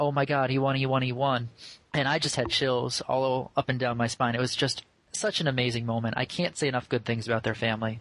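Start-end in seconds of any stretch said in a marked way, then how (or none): 0.0-1.5 put-on tearful, joyful voice. Retelling a phone call from Alec's mother: imitating Diane near tears of joy. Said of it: "sounded like she was almost near tears of joy".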